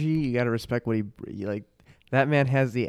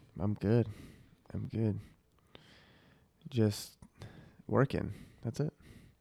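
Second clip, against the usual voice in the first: low energy, listless, flat, much quieter; 7 dB quieter than usual. Asked how he has been, answering in a low energy, flat voice. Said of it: "You sound a little low energy".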